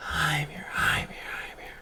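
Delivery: hushed whisper that echoes and trails away. Narrator voicing Mimi as her voice shifts and spreads through the room, echoing and fading out. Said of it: "It kind of just echoes out, fading out".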